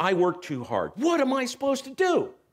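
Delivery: fired-up, exasperated angry plea, rising. Speaker retells his own earlier prayer to God, retelling an angry prayer. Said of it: "I'm really getting pretty angry".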